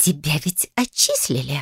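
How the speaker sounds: hissed through clenched teeth. Narrator reading a sister's retort to the narrator, hissed through teeth. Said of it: "прошипела сквозь зубы".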